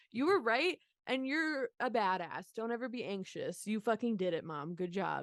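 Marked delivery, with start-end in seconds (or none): none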